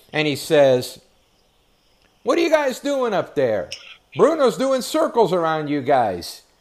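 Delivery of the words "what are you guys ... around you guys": play-acted, big, booming, loud, high, swooping holler. Retelling what Eric called up to the clockers: imitating Eric's loud voice. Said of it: "with his loud voice talking to the clockers".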